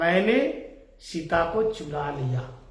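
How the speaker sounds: faint, slow, low murmur under the breath. Storyteller retells Ravana's words to the audience in a hushed, soft voice. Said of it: "धीमी आवाज में, धीरे से, आस्ते से, बिल्कुल स्वल्प स्वर में कहा".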